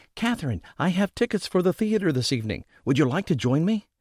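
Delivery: happy exclamation, called out. Narrator reading Gwen bursting through the door to Catherine: cried happily. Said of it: "Gwen cried happily".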